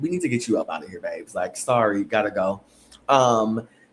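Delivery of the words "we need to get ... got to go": plain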